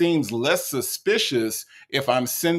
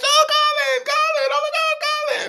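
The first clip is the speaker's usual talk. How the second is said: very high, delighted, swooning gush. Retelling how a woman's attitude changed on the phone: imitating her delighted gushing. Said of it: "her whole attitude changed".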